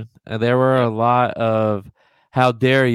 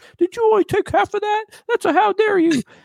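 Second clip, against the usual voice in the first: shrill, very high put-on British voice. Retelling to friends what a man said while drinking shots: imitating him like a British man. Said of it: "That's exactly how he sounds".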